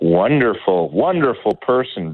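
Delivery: dripping, heavy sarcasm. Naming someone during a political discussion: dripping sarcasm. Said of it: "read the dripping sarcasm here".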